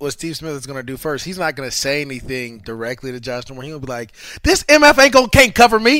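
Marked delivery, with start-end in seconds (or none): 4.4-6.0 very loud, very high jeering taunt. Describing opening trash talk, imitating Steve Smith saying it loud. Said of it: "say it loud enough so everybody can hear it".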